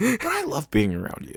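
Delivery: high voice, fighting back tears, on the edge. Speaking to a friend, holding back tears. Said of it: "I'm gonna try not to cry right now".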